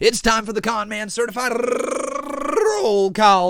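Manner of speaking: very slow, high, drawn-out voice breaking mid-line. Host announcing the show's roll call to viewers, with a voice crack. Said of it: "That was a nice little voice crack right there".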